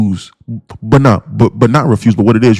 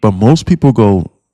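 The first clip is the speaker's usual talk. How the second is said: usual speaking voice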